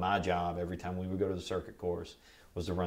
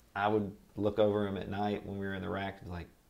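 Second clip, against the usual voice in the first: plain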